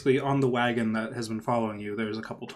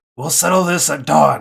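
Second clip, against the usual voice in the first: very loud, gruff voice calling out; 4 semitones higher, 12 dB louder than usual. Narrating the game, voicing an unseen figure calling out to the players, gruff voice. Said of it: "You hear a gruff voice call out".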